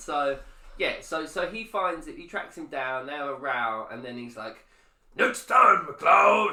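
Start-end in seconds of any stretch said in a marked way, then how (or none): 5.1-6.5 very loud, high-pitched belted voice. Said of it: "I really enjoy doing the voice".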